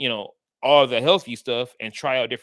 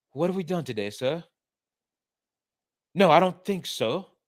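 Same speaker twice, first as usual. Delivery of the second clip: clumsy, poor put-on British accent, pitched up; 5 semitones higher than usual. Mocking an actor's accent in a few scenes, doing Keanu Reeves's bad British accent. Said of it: "he'd be like".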